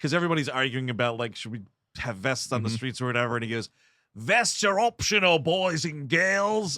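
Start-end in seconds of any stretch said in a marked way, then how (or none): 4.2-6.8 put-on over-the-top thick Australian accent, drawn out. Quoting a man in a scene where everyone argues about vests, in an over-the-top Aussie accent. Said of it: "the Aussie accent is really into overdrive".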